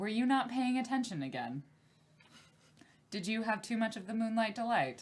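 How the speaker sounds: snide, snarky, sarcastic needling tone. Voicing a character who asks if another wasn't paying attention: sarcastic. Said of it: "Now I'm not feeling the sarcasm".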